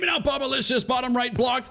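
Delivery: high, excited, shouted play-by-play announcer voice.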